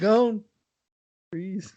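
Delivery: mock-unconfident, hesitant, unsure delivery. Teasing the listener about how they said it, mimicking an unsure delivery. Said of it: "your lack of confidence when you said it".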